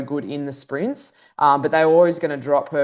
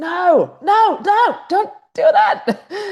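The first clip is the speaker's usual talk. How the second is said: very high, very drawn-out, slow, loud wailing scream; 5 dB louder than usual. Retelling screaming on the first lap during roadside commentary: scream like Michael Scott. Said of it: "I was screaming on that first lap, like Michael Scott from The Office".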